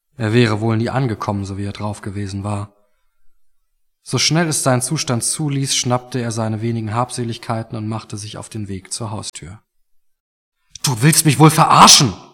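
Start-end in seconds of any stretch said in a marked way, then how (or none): 10.9-12.1 loud, full-throated bellowing roar. Narrator reading Mark confronting the others in his kitchen, shouting. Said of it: "brüllte Mark jetzt".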